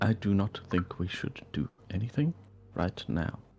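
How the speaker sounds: barely audible, very quiet, hushed, under-the-breath voice. Answering the party while Sol is preoccupied, speaking very quietly. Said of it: "I'll say back very quietly".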